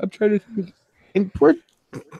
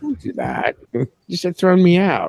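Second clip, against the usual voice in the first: usual speaking voice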